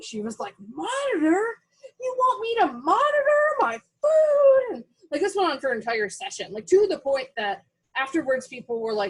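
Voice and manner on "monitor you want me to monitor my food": shrill screaming, very high and stretched out. Retelling how she blew up during a therapy session: imitating someone screaming. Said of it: "she just started screaming at me".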